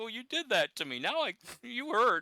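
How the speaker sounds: put-on very high, childish whine like a hurt kid. Retelling how Bret delivered his reply to a rival: childish Bret impression. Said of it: "I love the childish sound of it".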